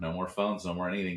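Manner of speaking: mock nonchalant, cavalier tone. Imitating a stranded film character's reaction to being stuck: imitating a cavalier attitude. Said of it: "I do love his cavalier attitude towards it".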